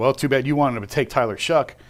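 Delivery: put-on sarcastic tone. Talking about quarterbacks, the speaker repeats what he once said: retelling a sarcastic remark. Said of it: "And I sarcastically said".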